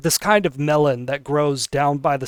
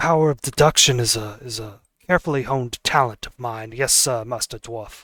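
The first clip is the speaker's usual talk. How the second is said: lower hardboiled noir detective voice; 3 semitones lower, 3 dB quieter than usual. Voicing a detective answering a dwarf player: noir detective voice. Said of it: "he talks like a noir detective".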